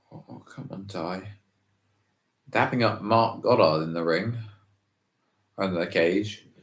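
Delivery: quiet, hushed, low-key voice. Reacting to a moment in the ring, in a quiet, hushed voice. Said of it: "Sorry, I'm being so quiet".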